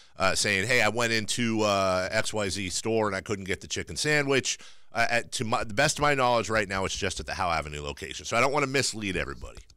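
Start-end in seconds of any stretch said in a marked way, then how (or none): none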